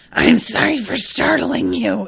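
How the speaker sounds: high, loud, creaky, rough, menacing horror voice. Imitating how the audiobook voices a character's line: imitating a terrifying voice. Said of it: "sound like a terrifying voice".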